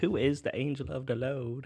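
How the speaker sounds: put-on country-style accent throughout. Retelling a phrase Betty kept repeating, imitating Betty's country accent. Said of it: "saying it in a country accent".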